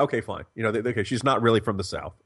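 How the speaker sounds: ordinary delivery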